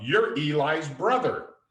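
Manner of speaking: booming, high-pitched shout at the top of lungs. Retelling a boy calling out to a man walking toward them in an empty lobby: retelling a booming shout. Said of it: "Sean belts out / In a booming voice".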